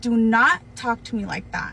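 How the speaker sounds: put-on assertive, standing-firm, speaking-up delivery. Retelling how they answered a man yelling at them on their break, raised voice. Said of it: "and then I raised my voice".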